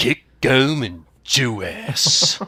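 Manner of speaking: big, announcer-style action-hero delivery. Asked to do the Dick Kickem line, performing the Dick Kickem voice. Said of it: "Can you do the Dick Kickem?".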